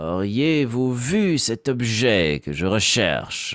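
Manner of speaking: smooth, slippery, gliding delivery with syllables leaning. Sample line voiced as if walking on oil: smooth gliding voice. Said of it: "une voix qui glisse".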